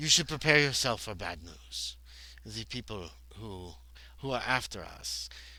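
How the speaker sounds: poor put-on Russian accent. Voicing a character in the scene, in a bad russian accent. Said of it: "I'm not doing a very good Russian accent here".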